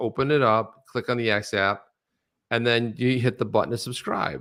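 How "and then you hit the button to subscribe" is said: ordinary talk, nothing marked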